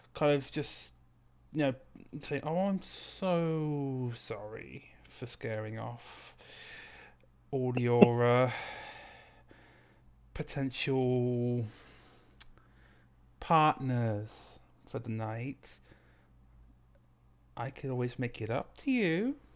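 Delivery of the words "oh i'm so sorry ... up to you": sweet, sultry, low, slow voice, "so" stretched. In a tabletop game, Amira touches Cyrilla's cheek and apologizes: sweetest, most sultry voice. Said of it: "in the sweetest, like sultry, most sultry voice possible".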